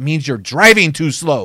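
loud, angry, put-on angry boy voice. Retelling a boy's reply to a pastor, imitating an angry boy. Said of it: "with anger in his eyes said".

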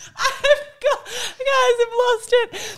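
high, squealing laughter through words.

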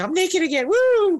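very high, squealed film-star voice, pitched way up. Recapping a film scene, doing an impression of Catherine Zeta-Jones. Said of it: "that was my impression of Catherine Zeta-Jones".

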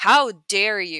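furious indignant outburst. Retelling standing up to a male youth pastor: retelling own livid outburst. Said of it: "I was livid".

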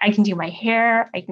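put-on tearful woman's voice. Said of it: "and just in tears".

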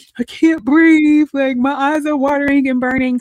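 high, loud mock panicked distress.

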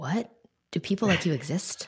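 stunned, shocked disbelief. Acting out their own reaction to another speaker's answer: acting out shock. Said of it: "so much shock in my voice".

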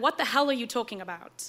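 ordinary talk

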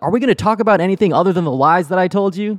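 mock, high, full-on screamed outburst. Retelling a scripted line written for Pratt: imitating Pratt screaming. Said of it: "he's screaming".

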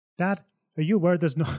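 put-on Irish-accented voice. Retelling a boy calling out to his dad, in an Irish accent. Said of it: "I'm still doing the Irish accent".

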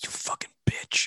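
put-on muttering under breath. Imagining what a baseball player mutters at each at-bat: imitating muttering under breath. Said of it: "hear him saying under his breath".

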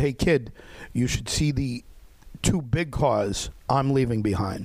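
ordinary talk

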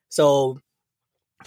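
ordinary delivery

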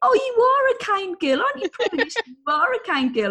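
mock very high, carrying outdoor shout. Retelling calling out to a horse across a field: imitating her own shouting. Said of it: "I was shouting in the field".

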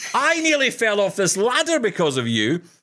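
very high, shrieking, high-pitched scream. Retelling mum yelling at the computer from a ladder: imitating mum screaming. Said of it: "screaming at the computer".

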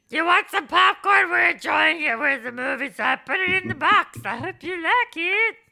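motherly voice, loud. Doing an impression of a mother who sent popcorn: imitating their mom. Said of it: "Her impression's getting worse".

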